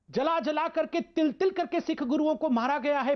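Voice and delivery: deeply emotional, impassioned voice. Recounting how the Sikh Gurus were killed: speaking with great emotion. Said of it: "मैं बहुत emotion के साथ बोल रहा हूं".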